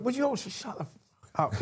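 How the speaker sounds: very shrill, very high, swooping wild shout. Retelling telling a murmuring bar crowd at a charity event to be quiet: retelling a loud shout. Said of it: "in a really loud voice".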